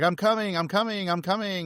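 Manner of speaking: pitch climbing, pace quickening. Recapping a movie, quoting a character running through corridors: imitating voice getting higher and faster. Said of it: "his voice gets more and more high-pitched, and it speeds up more and more".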